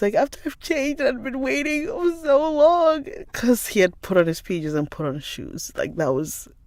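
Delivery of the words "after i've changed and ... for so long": mock teary, high, crying little boy voice. Retelling a child's tearful complaint after a changed plan: imitating a crying child. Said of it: "So that's why he cried".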